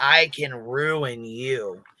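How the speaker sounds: menacing, very slow delivery. Retelling how an AI bot talked to a guy, imitating it like an ex-girlfriend. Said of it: "she sounds like an ex-girlfriend".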